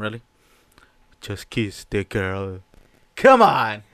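low, deep character voice. Joking with co-hosts about playing a part, doing a Sebastian lobster voice. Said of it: "here's my lobster impression".

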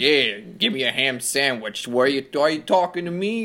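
put-on man's voice with a strong Brooklyn accent. Mocking a game character, a guy from brooklyn with robot arms: imitating a brooklyn guy. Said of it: "some fucking guy from Brooklyn with robot arms".

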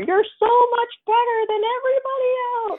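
play-acted, very high hollering cheer. Retelling how she cheered across the bar at an open mic: imitating someone screaming. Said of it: "screaming across the bar".

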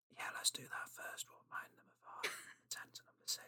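very hushed, barely voiced whisper. Agreeing to remind the audience of the earlier picks: whispering. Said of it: "I'm just whispering".

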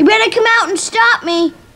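very high yell. Calling out to the family to come stop him: yelling. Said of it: "he's yelling this".

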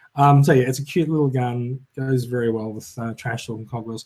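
ordinary talk

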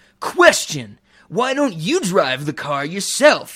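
grating, put-on surfer dude voice. Retelling a movie character's line, imitating a surfer dude voice. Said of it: "the surfer dude voice the whole movie".

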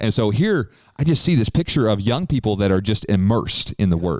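usual speaking voice

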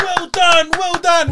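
high, loud, gushing cheerleading tone. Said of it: "his brothers are like".

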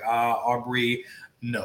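ordinary delivery

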